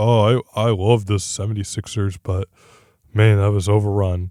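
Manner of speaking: shaken, deep, slow, rattled, lamenting voice. Retelling a player's comments at the end of the game: Joel Embiid voice. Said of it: "how do I do his voice?".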